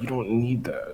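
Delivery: quiet aside muttered under the breath. In a tabletop game, while a player asks the price of a wolf head, said under the breath. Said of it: "Kind of say under my breath".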